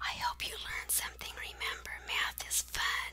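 soft, quiet whisper. Closing a video of worked math examples, the presenter signs off, whispering.

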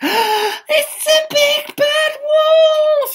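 very high, loud crying out. A character sees beady eyes, sharp claws and terrible teeth; crying out. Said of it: "he cried".

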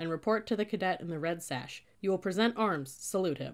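plain

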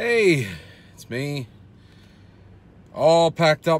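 slightly out of breath, very loud and high. Talking to you guys after packing up from the bridal show, a little out of breath. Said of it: "a little out of breath".

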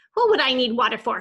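loud, snappish, irritated snapping tone. After stumbling to the curb, a woman answers a bystander: snapping. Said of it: "she snapped".

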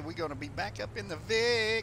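loud, high-pitched shouting yell. Streaming a police game, telling viewers you're heading back, yelling. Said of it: "Sorry, I'm yelling".

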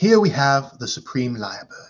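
put-on nature documentary narrator voice. Talking about nature documentaries, the speaker tries a David Attenborough impression. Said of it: "I haven't practiced Attenborough".

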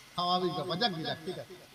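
voice giving out, tired.

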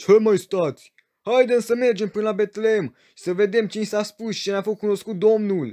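very loud, high-pitched shout. Narrator reads a shepherd's call to the other shepherds, shouting. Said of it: "a strigat Amos".

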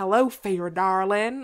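really strong Southern US accent. Imagining how a line would sound in another accent: really southern american accent. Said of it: "in like a really Southern American accent".

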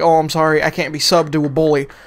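ordinary talk

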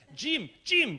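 put-on high-pitched, loud voice with Spanish accent. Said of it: "in this wonderful Spanish accent".

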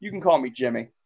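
normal talking voice

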